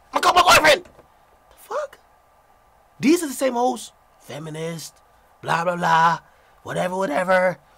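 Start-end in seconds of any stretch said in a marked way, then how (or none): 0.2-0.9 put-on very high, shrill, loud New York accent. Mocking what such women always say: imitating a loud New York accent. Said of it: "you know what these hoes always say".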